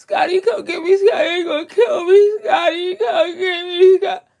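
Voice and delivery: sobbing, begging, high-pitched crying. Mocking someone said to be crying over here: imitating Pookie crying. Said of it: "you over there like fucking Pookie on fucking New Jack Sk-".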